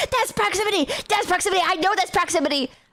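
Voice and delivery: put-on panicky, frantic, freaked-out accusing tone, repeated. Telling Chad about a guy in a video tweaking out, imitating a guy freaking out. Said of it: "the guy is tweaking out like really hard".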